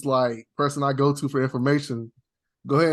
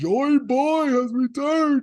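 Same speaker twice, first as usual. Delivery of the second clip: very high, slow, drawn-out silly elephant voice; 11 semitones higher than usual. Retelling the elephant's line from the show: mocking the elephant's funny voice. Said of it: "I'm just trying to keep mocking his voice".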